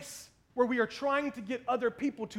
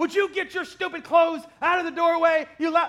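mock over-the-top angry nagging yell, very loud, shrill; 5 semitones higher, 8 dB louder than usual. Retelling a partner's complaint, exaggerating it: imitating wife's exaggerated angry nagging. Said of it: "so I'm gonna exaggerate it a lot".

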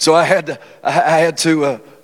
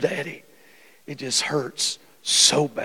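mock crying, tearful and very slow; 8 dB quieter than usual. Retelling a sick child's words in the night: imitating a crying child. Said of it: "she's crying and she says".

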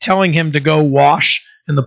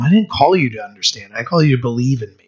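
put-on whisper, lower pitch; 3 semitones lower than usual. Retelling what God says to a frustrated man: imitating a whisper. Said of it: "God just whispers to him".

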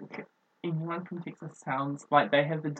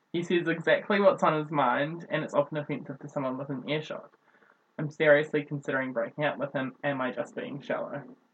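ordinary talk

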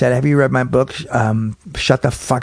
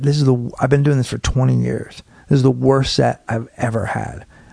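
usual speaking voice

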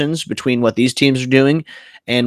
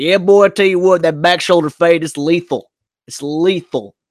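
fake West Texas accent, higher pitch; 5 semitones higher than usual. Joking about the podcast if the Cowboys won, in a fake West Texas accent. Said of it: "talk in fake, like, West Texas accents".

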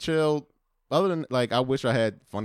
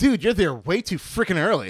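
put-on most typical boy voice, pitched high; 8 semitones higher, 4 dB louder than usual.

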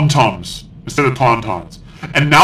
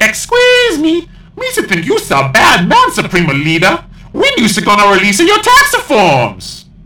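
goofy, high, bouncy, swooping sing-song voice; 7 semitones higher than usual. Reading out a post from a gungan, in JJ Binks gungan voice. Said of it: "This gungan dude from Naboo. He goes".

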